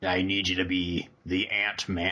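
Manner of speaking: utterly sincere, dead-serious, slow, earnest delivery. Quoting a film line someone says so earnestly: imitating an earnest delivery. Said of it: "he says it so earnestly".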